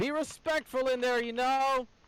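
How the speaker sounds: very high, booming woman's voice. Voicing a lady calling after the group as they pass, booming lady's voice. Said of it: "one more booming voice of the lady".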